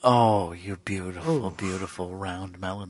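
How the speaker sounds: very low, hushed, soft seductive murmur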